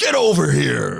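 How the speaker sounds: very loud, bellowed, put-on American accent. Quoting a Mortal Kombat line after talk of fatalities: American accent.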